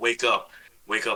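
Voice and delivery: barely audible, very quiet, hushed half-whisper. Retelling how their girl woke them in the night: imitating someone half-whispering. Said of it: "And she was whispering to me".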